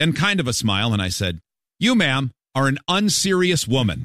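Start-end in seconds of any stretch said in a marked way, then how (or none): 1.8-4.1 put-on deadpan delivery. Retelling telling off another driver through a car window: imitating own deadpan delivery. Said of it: "I looked at her with a straight face".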